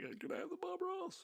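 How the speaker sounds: mock very high, high-pitched, tearful crying voice. Retelling asking for the painting after dad passed: retelling own tearful plea.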